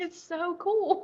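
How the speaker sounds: talking through tears. Talking about hearing from people who succeeded, crying while talking. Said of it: "I don't know why I'm crying".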